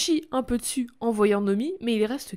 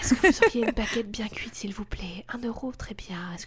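mock whispering voice. Speaker imitates a man who whispers everything, buying bread: imitating a whisper. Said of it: "il dit tout en chuchotant".

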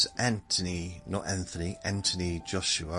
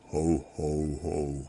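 ho ho ho dropped as low as possible; 4 semitones lower than usual. Trying a Santa laugh after saying she can't do deep, deep Santa voice. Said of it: "That's about as deep as I can get".

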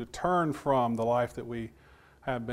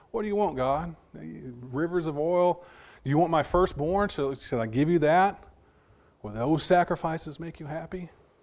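mocking, sarcastic, raised and pitched-up tone; 5 semitones higher, 5 dB louder than usual. Voicing Israel's questions to God from Micah: acted sarcastic questioning. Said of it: "in a sarcastic way".

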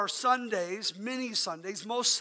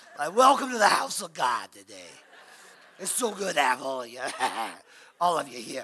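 put-on New York accent; 7 semitones lower, 4 dB louder than usual. Joking about a pollen-affected voice while welcoming the church: put-on new york accent.

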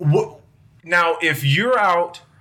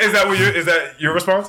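plain

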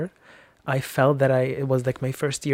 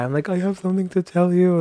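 put-on tearful crying voice, much higher; 5 semitones higher, 3 dB louder than usual. Retelling sitting down with her at a coffee place, reenacting crying while confessing. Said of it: "immediately starting to cry".

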